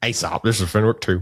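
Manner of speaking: cartoonish self-important voice. Recapping a scene, the speaker does a Fenwick two impression. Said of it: "You do a great impression".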